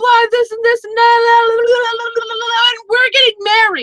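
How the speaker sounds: high, loud panicked shouting. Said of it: "like, yelling at him".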